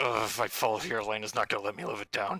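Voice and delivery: hushed muttering under his breath. Playing a character who fears falling in a fight: muttering under his breath. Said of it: "Colleen swears under his breath".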